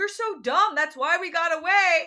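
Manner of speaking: teasing taunt. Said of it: "starts taunting the Cyclops".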